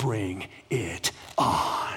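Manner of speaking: whispered, hushed, breathy action-hero voice. Retelling Jesus answering death at the tomb: Liam Neeson voice. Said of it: "in his best Liam Neeson voice".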